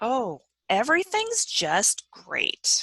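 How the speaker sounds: heavy, slow, swooping sarcastic tone. A son on the phone with his mother answers her question, sarcastic. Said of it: "heard the sarcasm in his voice".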